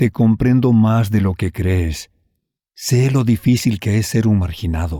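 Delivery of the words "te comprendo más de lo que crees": plain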